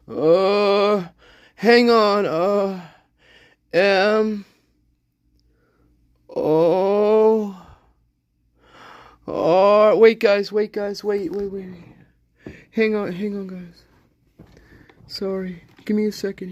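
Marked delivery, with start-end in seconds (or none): 2.2-16.5 struggling to regain composure. Asked to spell your name for the record, struggling for composure. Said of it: "I'm trying to compose myself here".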